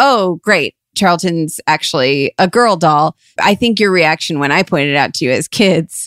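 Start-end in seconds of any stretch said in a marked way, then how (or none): none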